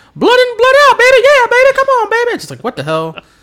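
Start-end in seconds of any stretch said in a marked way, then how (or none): 0.2-2.4 screeching all-out yell, very high, loud and shrill. Retelling what he was yelling on pay-per-view, imitating Jimmy Hart yelling. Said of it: "he's just yelling that from Jimmy Hart's mouth".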